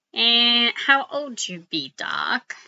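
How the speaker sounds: slow, drawn-out, swooping, sing-song cartoon rabbit voice. Describing a Toon Moon battle game, the speaker talks in a Bugs Bunny voice. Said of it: "I'm trying to sound like uh, Bugs Bunny".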